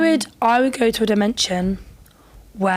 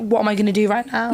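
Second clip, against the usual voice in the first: ordinary talk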